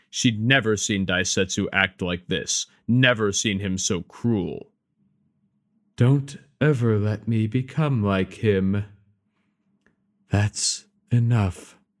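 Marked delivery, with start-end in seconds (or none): 10.3-11.7 softly whispering. Reading a story aloud, voicing Shihai's line, whispered. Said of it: "she whispered".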